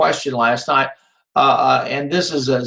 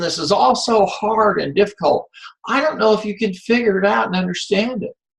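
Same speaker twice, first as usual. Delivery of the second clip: high, facetious, put-on mock worry; 6 semitones higher than usual. Teasing the class that the queries are hard, being facetious. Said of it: "I'm being facetious".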